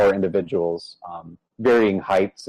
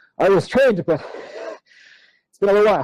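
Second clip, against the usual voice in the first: huffing, wheezing, out of breath, pitched very high; 12 semitones higher than usual. Still leaning over, holding up one finger, he explains himself, huffing and wheezing. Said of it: "kind of just leans over and says, / and he's huffing and he's wheezing".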